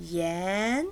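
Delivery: yan with rising second tone, low to high. Chinese lesson on the word for rock: rising second tone on yan. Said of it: "second tone goes from bottom to top. Go, your voice goes up. Yan, like that".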